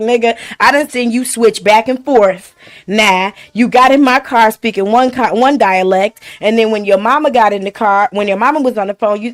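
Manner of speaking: ordinary talk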